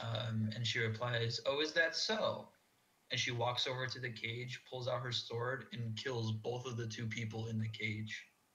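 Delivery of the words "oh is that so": small, high feminine character voice, slow. Narrating a scene, voice a woman replying from behind the giant: small feminine voice. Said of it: "you hear a small feminine voice".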